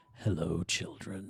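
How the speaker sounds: put-on creepy professor voice. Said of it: "one of the creepiest characters in Pokemon with this line".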